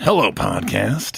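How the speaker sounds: scratchy, rough, creaky put-on voice. Reading out a listener email that asks for a line in Dave voice. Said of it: "in Dave voice".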